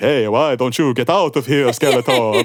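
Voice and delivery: wooden, slow, stiff, stilted delivery. Retelling a wooden movie line, doing a Dolph Lundgren impression. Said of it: "learned English from was Sylvester Stallone and Dracula".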